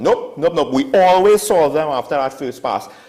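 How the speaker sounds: sarcastic. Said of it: "which is me being sarcastic".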